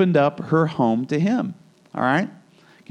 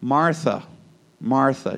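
acted, serene, settled, very calm and even voice; 3 semitones lower than usual. Retelling Jesus answering a woman who complains about her sister: imitating Jesus's very calm voice. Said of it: "Jesus says in a very calm voice".

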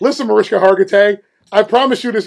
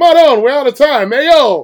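put-on New Jersey mobster voice, higher pitch; 4 semitones higher, 3 dB louder than usual. Quoting a TV character's line: Tony Soprano impression. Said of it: "Tony Soprano once said".

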